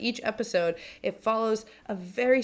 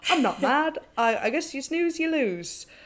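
put-on poorly done South African accent, higher pitch; 6 semitones higher than usual. Retelling Gary's reaction to two others making out, in Gary's South African accent. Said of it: "In his South African accent that I cannot do".

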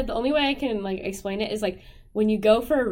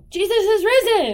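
mimicked scream, higher and louder; 10 semitones higher, 6 dB louder than usual. Retelling how a man walking out startled everyone: imitating someone screaming. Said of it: "screamed out".

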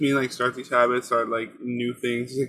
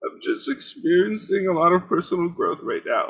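mock extremely depressed, gloomy tone in high voice; 6 semitones higher than usual. Reading Hannah Limon's group chat message aloud, mock extremely depressed voice. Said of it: "in an extremely depressed voice".

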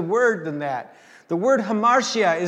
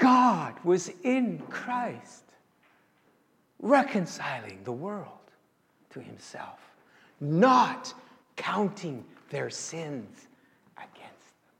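voice straining not to cry; 3 semitones lower, 6 dB quieter than usual. Quoting a favorite New Testament verse, trying to say it without crying. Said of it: "I'm going to try to say this without crying".

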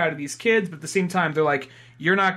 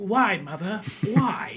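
put-on baby boy voice. Acting out the baby's reply in a comic panel: voicing baby Clark. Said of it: "when Martha is feeding Clark as a baby".

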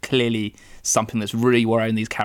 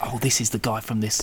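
mock whispering. Imitating the press in a film leaning in to the audience: imitating a whisper. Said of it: "whispering to you".

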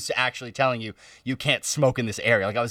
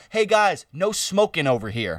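sarcastic, half-joking tone; 4 semitones higher than usual. Speaker retelling what a man said to their group, imitating a sarcastic voice. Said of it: "sarcastic voice".

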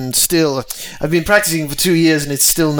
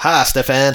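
put-on fake American accent. Greeting a character at the door in a put-on American accent. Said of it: "it's gonna be in an American accent".

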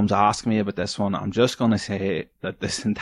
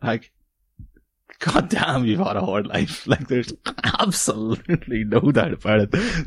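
words pushing through stifled, choked-back laughter, swooping pitch. Speaker reacting to a stranger's bio, choking back laughter. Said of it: "I'm choking back laughter here".

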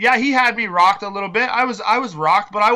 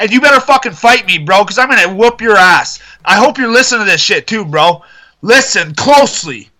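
very loud, heated, fired-up rant; 8 dB louder than usual. Speaker challenges Simon to a fight, fired-up ranting. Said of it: "You got a little fired up".

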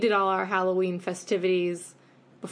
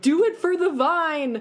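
very high, drawn-out, acted-out child scream; 9 semitones higher, 4 dB louder than usual. Retelling what a kid yelled while running away: imitating a kid screaming. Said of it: "one kid was screaming".

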